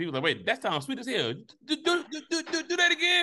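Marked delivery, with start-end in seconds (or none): 1.6-3.2 very high-pitched stutter repeating do. Joking that people who stutter invented the remake, imitating a stutter. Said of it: "people who stutter invented the remake".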